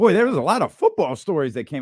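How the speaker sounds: fast, hyped, excited voice with a crack. A host moves on to football stories, hyped, voice jumping up. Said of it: "I don't know why my voice just did that either".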